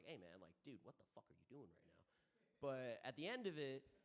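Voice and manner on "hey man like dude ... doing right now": play-acted, very quiet, held-in fury. Retelling telling someone off while keeping temper: imitating restrained anger. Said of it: "I'm keeping my temper".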